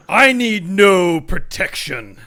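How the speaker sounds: enraged, furious, very loud shouted outburst. Reading lines in a scripted scene with a partner, angry. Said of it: "So just read your lines angry".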